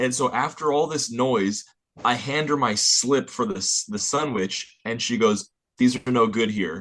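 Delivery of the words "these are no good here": put-on rude, belligerent voice. Retelling what the woman at the counter said: imitating a belligerent tone.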